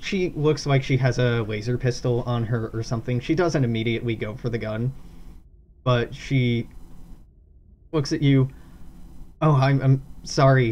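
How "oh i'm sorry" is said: flustered voice, louder, slower. A game narrator voices Casper apologizing to the players, embarrassed and flustered. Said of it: "she looks embarrassed and flustered".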